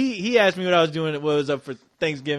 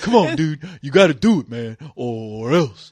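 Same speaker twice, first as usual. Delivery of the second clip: low, slow, unhurried, drawled put-on voice; 5 semitones lower than usual. Retelling how a site regular begs to be a show guest: put-on voice imitating Surfer. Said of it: "that's not how he talks, but I like talking like that".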